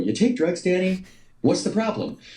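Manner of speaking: high, flustered, nervous, excited blurting. Retelling quoting Caddyshack to someone met: imitating own nervous excited blurt. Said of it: "I'm so nervous and excited, I go".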